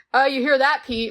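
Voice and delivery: put-on smug voice. Retelling a TV scene where Dawn teases Pete: imitating a smug line. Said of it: "The way she says it is so smug".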